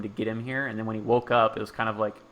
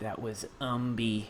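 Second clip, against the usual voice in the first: mock dread-filled, blood-curdling, chilling, hair-raising voice; 7 dB quieter than usual. Voicing two characters who look at each other: blood-curdling voice. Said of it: "a blood-curdling voice".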